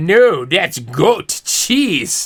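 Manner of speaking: put-on slow, low, drawn-out waiter accent. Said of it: "The waiter's accent changed".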